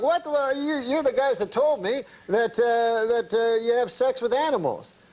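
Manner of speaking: high, indignant, protesting tone. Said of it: "like, indignant".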